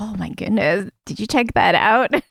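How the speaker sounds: hushed half-whisper, under the breath. Voicing a character half-whispering to Hot Jackie about a butt: half-whispering. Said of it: "She's, like, whispering to Hot Jackie".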